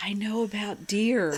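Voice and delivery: put-on whispering child voice. Reading out a child's line about deer poop, imitating a child whispering. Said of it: "Seven-year-old whispers".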